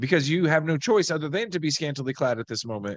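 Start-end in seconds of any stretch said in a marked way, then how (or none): none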